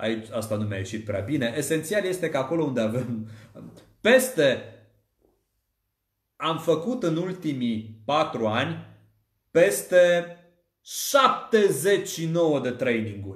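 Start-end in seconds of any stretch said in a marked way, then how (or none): 9.5-13.4 pause before șaptezeci și nouă, stress on șaptezeci. Public speaking training example on pause and emphasis: pause before stressed șaptezeci. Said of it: "Am accentuat, o, am accentuat un număr, am lăsat o pauză înainte".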